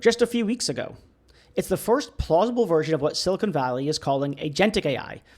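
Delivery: ordinary delivery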